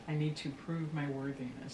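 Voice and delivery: normal talking voice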